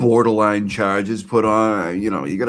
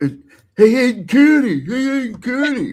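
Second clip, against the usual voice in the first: mock very high, shrill calling-out holler. Retelling how someone called out a name: imitating someone yelling. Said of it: "yelling, like, like Aiden can hear him".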